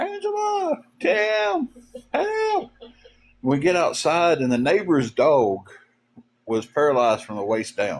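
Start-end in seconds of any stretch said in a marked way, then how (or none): 0.0-2.7 mock, very high, frantic, panicked scream. Retelling how he screamed from outside the house one night, retelling a scream for help. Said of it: "he's just screaming".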